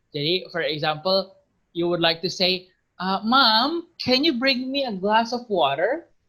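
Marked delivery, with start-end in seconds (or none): 3.0-6.0 plain American English accent, "Mom" drawn out. Teaching english, the speaker demonstrates a sample request: american accent. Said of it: "So that's American".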